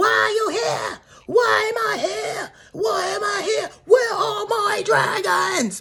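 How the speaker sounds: put-on, drawn-out, very high screeching outburst. Retelling a reality show fight, imitating someone screaming. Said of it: "Uber gets screaming".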